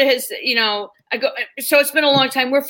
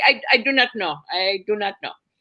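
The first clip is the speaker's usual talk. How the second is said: put-on Indian accent; 2 semitones lower than usual. Retelling a cab driver's answer to a strange question: imitating an indian cab driver. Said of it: "can't even do the Indian bit now".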